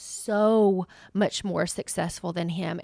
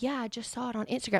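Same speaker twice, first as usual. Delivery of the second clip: imitated whisper, higher and quieter; 4 semitones higher, 6 dB quieter than usual. Retelling a coworker's news as a meeting starts: imitating Grace whispering. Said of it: "whispering to me now because the meeting has started".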